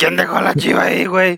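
odd in-between, high, creaky, rough-edged voice. Retelling what someone said on opening a drink: imitating Emilio's voice. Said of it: "pero con voz así como media, no sé, Emilio".

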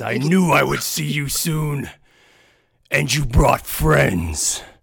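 measured, slow, booming orc voice. Narrating a scene, voicing the orc who greets his brother, in a loud booming voice. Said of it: "a loud booming voice".

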